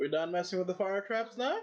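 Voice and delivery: loud, high calling out. Narrating the people inside calling out, in a loud voice. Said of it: "in a loud voice".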